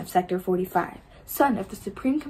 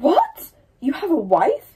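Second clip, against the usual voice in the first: sharply snapped, raised voice; 7 semitones higher, 7 dB louder than usual. Reading a book aloud, Warner's line: said sharply. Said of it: "says sharply".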